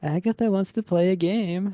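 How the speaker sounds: put-on high-pitched, childlike little-child voice. Voicing a voice heard in a cold haunted room: childlike voice. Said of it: "that childlike voice from the recording comes out and says".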